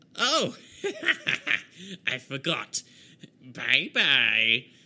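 mocking villain voice, laughing and taunting.

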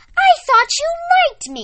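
very high, very loud, shrill, indignant outraged exclamation. Narrating Sarah's reply to Miss Rosie, who wants to go alone: outraged exclamation. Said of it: "Sarah exclaimed".

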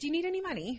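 pitch tips upward on the word "money". Recalling a habit of going up at the end of questions: pitch swings up on money. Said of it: "there's always this swing up at the end".

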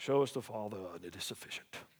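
very low, very soft, churchy religious intoning voice. Speaker quotes what Philip said to Jesus, in a put-on religious voice. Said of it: "don't you love that religious voice?".

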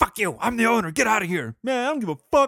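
put-on angry cussing yell. Telling a story, speaker acts out the owner yelling at him: imitating angry shouting. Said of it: "I'm doing all the voices".

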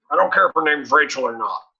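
high, loud, gravel-voiced growl.

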